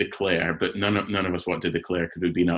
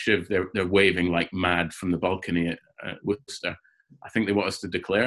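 ordinary delivery

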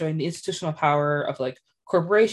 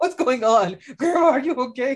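mock frightened child voice, higher pitch; 7 semitones higher, 4 dB louder than usual. Imitating a boy in a meme while his grandmother screams: imitating a scared boy. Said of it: "He was so scared".

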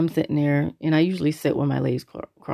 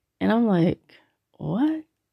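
ordinary talk

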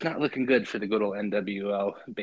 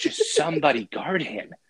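play-acted, worked-up, high, loud frustrated scream; 7 semitones higher, 5 dB louder than usual. Retelling watching the Rams game on TV: imitating screaming at the TV. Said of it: "screaming at my T V".

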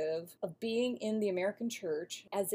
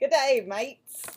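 very loud, high, put-on Australian accent; 5 semitones higher, 11 dB louder than usual. Trying an accent for listeners in Australia: attempted Australian accent. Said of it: "I knew you were gonna try it".

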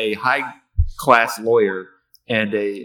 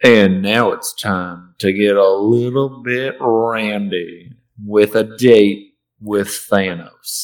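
put-on sultry Southern accent, randy drawn out; 4 dB louder than usual. Introducing the next segment, in a sultry voice turning southern accent. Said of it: "What is that accent?".

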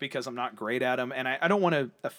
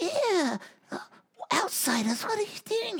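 put-on very high, elderly old woman voice. A game master voices an old townswoman confronting outsiders in the fog, old woman voice. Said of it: "an old female, about 80 years old, goes".

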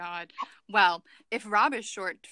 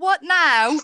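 very loud, high-pitched fake British accent; 7 semitones higher, 12 dB louder than usual. Reading the lines of the character Elizabeth aloud: put-on British accent. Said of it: "I almost picked up your accent".

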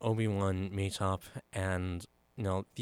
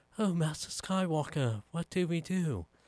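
put-on high-pitched small young boy's voice; 9 semitones higher than usual. Retelling a movie scene, quoting a young boy: imitating a young boy. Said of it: "you have that young boy".

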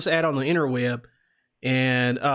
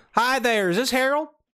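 put-on laid-on American Southern accent, pitched up; 8 semitones higher than usual. Phoning a man named Harold, opening the call in a Southern accent. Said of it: "we're doing the Southern accent".

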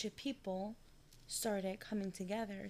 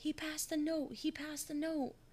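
play-acted, high-pitched small child screaming; 8 semitones higher, 3 dB louder than usual. Retelling a story where a little kid starts screaming; imitating a kid screaming. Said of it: "this little kid starts screaming".

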